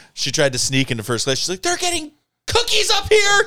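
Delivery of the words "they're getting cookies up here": very high-pitched, frantic screaming. Retelling a scene where Elaine sneaks into first class: imitating Elaine screaming. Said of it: "And she's screaming".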